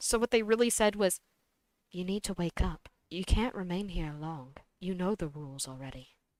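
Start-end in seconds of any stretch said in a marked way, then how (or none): 1.9-6.1 put-on, low, hushed, ominous foreboding tone. Retelling what they really said, in a more ominous tone. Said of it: "they said it in a more ominous tone".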